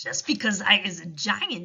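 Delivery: ordinary delivery, nothing marked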